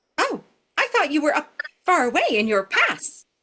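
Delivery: tiny, squeaky, squeaking little mouse voice. Storyteller voicing a little mouse answering a passing traveler, in a squeaky mouse voice. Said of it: "it squeaks".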